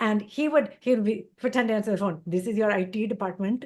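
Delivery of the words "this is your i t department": put-on Indian English accent. Retelling someone pretending to answer the phone, in an Indian accent. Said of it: "doing a better Indian accent than me".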